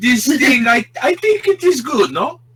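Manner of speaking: bad put-on German accent. After another speaker suggests it, a player talks in a bad German accent. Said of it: "start talking in a bad German accent".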